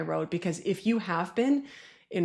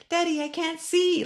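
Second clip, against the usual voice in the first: put-on little kid voice, much higher, slower; 11 semitones higher than usual. Retelling a small child behind them in the crowd, imitating a little kid's voice. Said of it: "I heard this little voice behind me".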